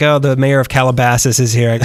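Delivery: ordinary delivery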